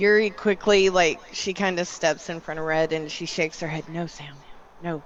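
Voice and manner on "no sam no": low, hushed voice, kept down close. In a role-play, Yuri steps in front of Red and shakes her head at Sam: low voice. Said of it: "she says it in a low voice".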